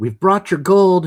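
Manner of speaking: full-throated, very loud, carrying shout. Player voices his character shouting in Goblin, yelling very loudly. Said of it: "is going to yell very loudly".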